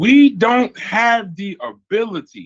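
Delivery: very slow, deliberate, spelled out word by word. Arguing how difficult this would be, speaker repeats the key point: said very slowly. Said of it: "I'm gonna say it real slow".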